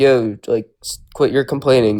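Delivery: ordinary delivery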